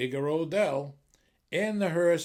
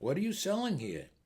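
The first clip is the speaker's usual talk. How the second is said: gentle, soft, quiet, quick voice; 4 dB quieter than usual. Telling a story, voicing Aunt Nellie asking at the window in a soft voice. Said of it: "in a soft voice asked".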